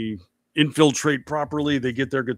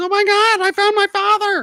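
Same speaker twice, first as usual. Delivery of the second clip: shrill, squeaky, very high, raised exclamation; 7 dB louder than usual. Recounting a film scene where a man reads a letter, imitating a very high voice. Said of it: "In in a voice even higher than that".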